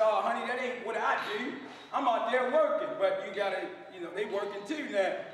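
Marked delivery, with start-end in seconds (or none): none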